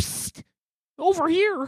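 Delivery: high, loud, shrill, raspy skeleton puppet voice. Narrator voicing a marionette calling out from a cluttered corner, raspy marionette voice. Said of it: "a raspy voice says".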